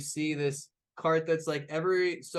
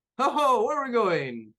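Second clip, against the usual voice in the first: jolly, cheerful, raised and pitched up; 8 semitones higher, 7 dB louder than usual. Voicing the coach driver greeting his passengers, the speaker uses a cheerful driver voice. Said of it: "he just for some reason loves his fucking job".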